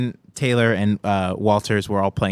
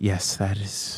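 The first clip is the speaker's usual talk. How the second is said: soft, breathed out on a sigh; 6 dB quieter than usual. Retelling a woman's answer about the speaker's eyes, imitating her sighing reply. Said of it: "She kind of sighs and goes".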